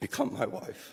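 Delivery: very high voice, emotion catching in the throat. Thanking your wife in a speech, choking up. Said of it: "He's choking up".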